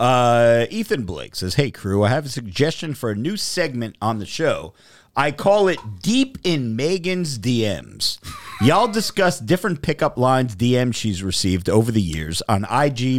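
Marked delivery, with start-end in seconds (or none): none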